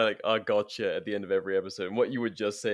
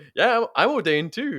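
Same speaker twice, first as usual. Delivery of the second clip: put-on English accent, pitched up; 11 semitones higher, 7 dB louder than usual. Retelling a childhood friend announcing to the room he is ordained, english accent. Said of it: "in an English accent".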